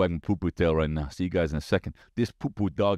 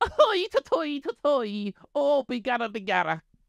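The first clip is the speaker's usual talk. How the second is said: put-on very high, thick stage Irish accent. After announcing it to the listeners, do your Conor McGregor impression. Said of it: "Here's my impression of Conor McGregor".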